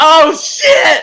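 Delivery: shrill, very loud, high-pitched startled outburst. Retelling jumping up scared in a movie theater: imitating a startled outburst. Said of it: "my little bitty ass jumped up".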